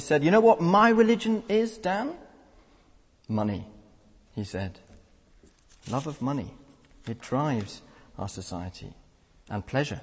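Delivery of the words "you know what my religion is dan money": mock contemptuous, scoffing, pitched-up scornful sneer. Retelling what a workmate said to the speaker in a lorry: mock-scornful workmate. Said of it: "in a rather scornful voice".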